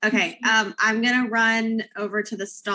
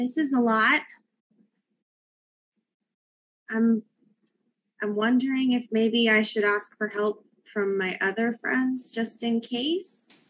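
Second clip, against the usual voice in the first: soft, quiet, low-volume voice, not whispering. Role-play character speaking to another character, quiet voice, not whispering. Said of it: "in a quiet voice".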